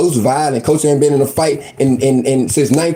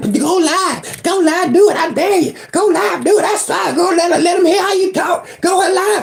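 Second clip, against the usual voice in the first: mock very high goading screams, over and over. Retelling how others dared him to go live: imitating someone screaming. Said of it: "or just screaming".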